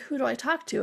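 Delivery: plain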